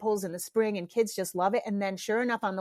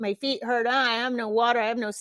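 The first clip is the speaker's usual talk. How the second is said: put-on whiny, complaining kid voice; 2 semitones higher than usual. Describing kids complaining on the way down from the top; imitating whiny kids.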